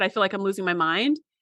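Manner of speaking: ordinary delivery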